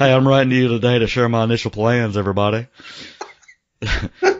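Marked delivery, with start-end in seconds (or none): 0.0-2.7 put-on mellowed-out, laid-back voice. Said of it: "like a mellowed out [name]".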